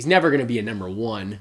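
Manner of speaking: plain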